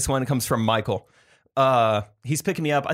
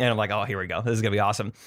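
plain

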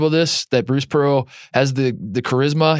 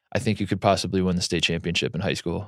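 mock, bone-dry, flatly delivered sarcastic deadpan; 7 semitones lower, 7 dB quieter than usual. Retelling how a coach mocked his team at practice: imitating Jankovic's dry sarcasm. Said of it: "very dry, very sarcastic".

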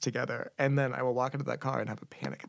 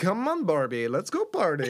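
weird, silly, swooping made-up voice; 4 semitones higher, 4 dB louder than usual. Joining in on acting out the get-out-of-bed phrase, stranger put-on voice. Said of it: "in increasingly stranger voices".

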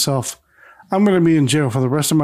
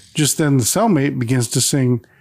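plain

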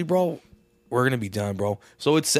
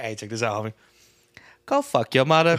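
bad, fake, put-on British accent. Asked to give a British accent, speaker answers in a bad British accent. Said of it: "give me that Britain fucking accent".

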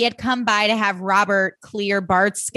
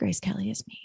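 put-on muttering under breath, quieter. Retelling a scene in which Blair speaks under her breath: Blair muttering under her breath. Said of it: "Blair under her breath is like".

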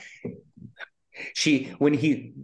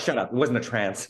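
ordinary delivery

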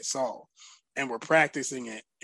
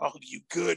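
imitated whisper; 3 semitones higher than usual. Retelling checking on an opponent after punching him: imitating own past whisper. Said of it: "I remember whispering".

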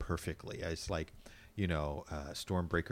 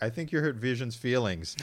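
ordinary talk

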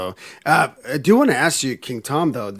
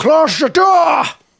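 put-on Scottish accent, higher and louder; 7 dB louder than usual. Doing another line in an impression: Sean Connery voice. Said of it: "this voice is gone".

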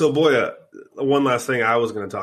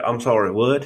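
put-on accent from Missouri. Retelling a conversation with a man from Missouri, the speaker imitates his Missouri accent. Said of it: "They all talk like this".

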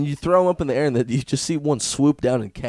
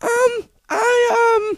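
put-on gorilla voice, higher and louder; 4 dB louder than usual. Imitating a talking gorilla: put-on gorilla voice. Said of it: "That's not a gorilla voice".

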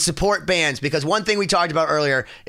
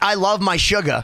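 usual speaking voice

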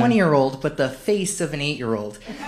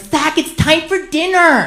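put-on very high, drawn-out voice; 11 semitones higher, 4 dB louder than usual.

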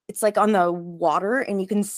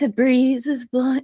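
put-on calming whisper, higher pitch; 5 semitones higher, 3 dB louder than usual. Retelling how Patrick calmed them on a scary trip: imitating Patrick whispering. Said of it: "whispered to me, he's like".

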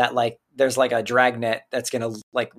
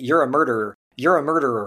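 plain

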